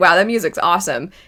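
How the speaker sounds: ordinary talk, nothing marked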